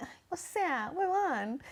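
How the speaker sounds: very slow, high, drawn-out pampered spoiled drawl. Imitating how some people talk, in a mock-pampered, spoiled way of talking. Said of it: "hablando así todo como consentido".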